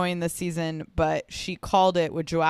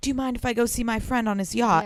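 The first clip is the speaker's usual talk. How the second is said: put-on whisper, higher; 5 semitones higher than usual. Retelling what she asked him after finding him: imitating someone whispering. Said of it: "she started whispering".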